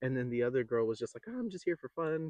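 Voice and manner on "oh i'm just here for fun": nice, sweet woman's voice, high and soft. Retelling what the sweet woman said on the show, imitating a sweet soft lady. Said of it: "Just real nice and sweet".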